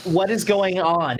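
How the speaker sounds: almost robotic, mechanical creature voice with echo. A golden-winged creature closes in on the group and asks; robotic echoing voice. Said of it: "It asks in like almost a robotic, like, like echoing voice".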